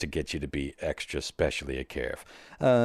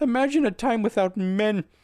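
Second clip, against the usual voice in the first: put-on whiny voice, higher and louder; 4 dB louder than usual. Retelling a video of Jordan Peterson: imitating Jordan Peterson whining. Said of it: "that whiny video where he's like".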